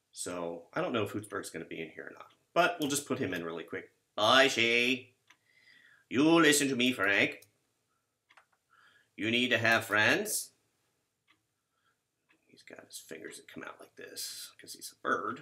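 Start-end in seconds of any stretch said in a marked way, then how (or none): 4.2-10.5 put-on New England Boston accent, slow and drawn out. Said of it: "that Boston accent".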